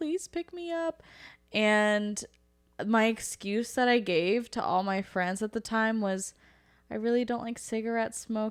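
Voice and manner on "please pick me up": high, soft, pleading voice through crying. Retelling calling Mom to be picked up, imitating crying. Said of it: "was like crying and like".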